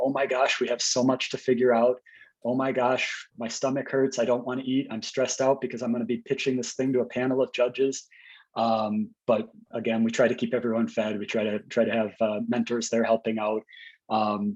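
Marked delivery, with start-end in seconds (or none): none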